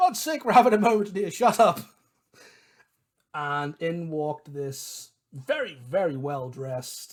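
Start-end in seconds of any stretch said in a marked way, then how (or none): 0.0-1.8 very loud, high-pitched shouting. Recounting how someone in a tavern shouted at music outside the door: retelling a shout. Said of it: "Achilles shouted out".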